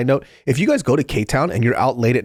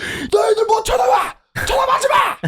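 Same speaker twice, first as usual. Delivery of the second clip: put-on drunk man screaming, higher. Retelling a drunk older man at a barbecue place: imitating a drunk man screaming. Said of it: "screaming at the top of his lungs".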